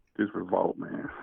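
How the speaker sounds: glum, hushed, breathy, quiet near-whisper. A caller to the Sports Coma show introduces himself, down in the dumps, low volume. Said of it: "You sound way down in the dumps".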